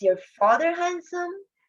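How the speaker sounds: pitch climbs at the end on handsome. Intonation lesson, example question said with rising pitch on handsome. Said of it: "Group A was read in a rising intonation or going up pitch or tone".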